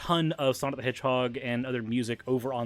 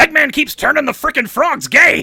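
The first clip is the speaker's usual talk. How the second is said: yelling high at full blast; 14 semitones higher, 15 dB louder than usual. Giving in and doing a requested voice: Alex Jones voice. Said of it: "do the Alex Jones voice".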